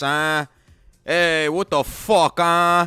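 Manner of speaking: put-on Italian-tinged New York accent. Describing New York Italian sandwich shops, imitating New York sandwich makers' talk. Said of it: "people who fucking talk like this".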